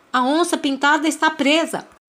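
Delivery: sudden, high, loud shout. Narrator reads the Bentivi calling out to stop the sussuarana's attack, shouted. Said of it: "o Bentivi gritou".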